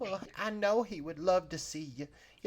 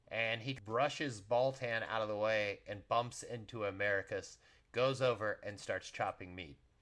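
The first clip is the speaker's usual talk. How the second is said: plain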